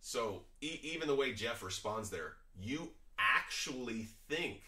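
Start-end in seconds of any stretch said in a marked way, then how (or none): 2.6-4.6 slow, dragged-out, condescending drawl. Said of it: "a little condescending".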